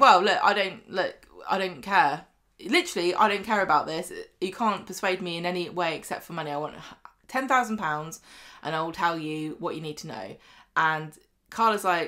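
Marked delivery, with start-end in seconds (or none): none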